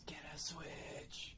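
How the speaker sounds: hushed, very quiet whisper under the breath. During a call where the audio keeps cutting out, the speaker is whispering. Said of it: "I was whispering".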